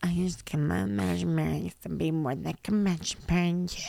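quiet, mumbled, monotone droning dim-witted voice. Quoting a guy proposing on one knee, in his voice: quiet droning voice. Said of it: "in his stupid voice".

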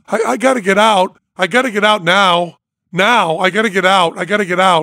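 acted panicked screaming. Retelling begging to get out before going into space, acting out panicked screaming. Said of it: "and I'm crying, and I'm screaming".

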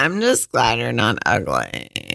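sing-song, low, swooping woman's voice. Asked to do it again, repeating the words of a woman they dislike, imitating a woman's voice. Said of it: "I can't even do her voice yet".

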